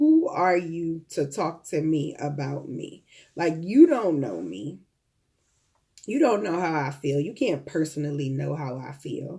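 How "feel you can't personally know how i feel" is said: ordinary talk, nothing marked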